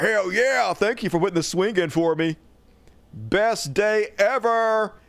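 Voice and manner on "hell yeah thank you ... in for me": overjoyed, gushing, delighted bear voice. Showing a video of a bear on a swing, voicing the bear. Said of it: "He's like".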